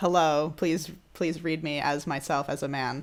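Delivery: plain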